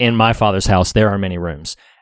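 ordinary talk

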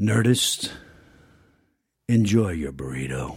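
deep, husky voiceover voice from the diaphragm, slow. Signing off a podcast on request in a voiceover voice: deep husky voice. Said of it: "in whatever manner you want".

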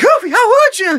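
squeaky voice, pitched way up high. Retelling a video where Mickey catches Goofy: Mickey Mouse voice. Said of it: "doing the voices of Goofy, Minnie, and Mickey".

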